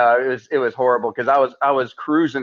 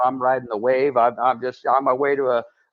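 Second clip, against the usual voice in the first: plain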